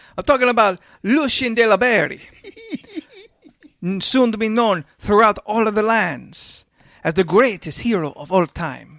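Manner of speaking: corny, hammed-up Italian accent, high and loud. Playing a character, asked to give it to the group, in a corny Italian Mario accent. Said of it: "real corny ass Italian accent".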